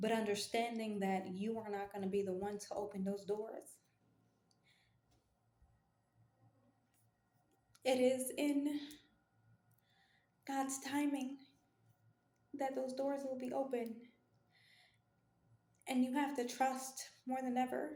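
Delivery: fighting back crying. Addressing listeners directly, holding back tears. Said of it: "I'm trying not to bawl".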